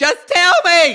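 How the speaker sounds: high, loud, slow scream.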